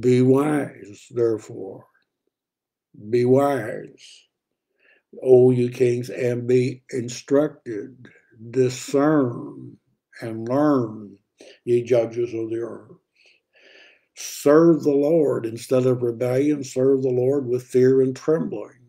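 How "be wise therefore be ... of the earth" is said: very slow, deliberate, unhurried word-by-word reading. Speaker reads verse 10 aloud, very slow. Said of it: "I want to slow down and just say this very slowly".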